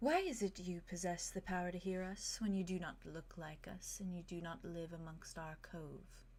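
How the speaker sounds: gentle, very soft, hushed voice. Voicing the Sovereign questioning a player character: very soft voice. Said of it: "very softly says to you".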